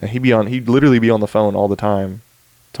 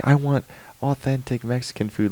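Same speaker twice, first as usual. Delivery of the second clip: mock irate yelling, angry but contained; 4 semitones higher, 5 dB quieter than usual. Describing a satire video, quoting a girl yelling at a taco truck owner: imitating a girl yelling. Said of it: "she starts yelling at him like".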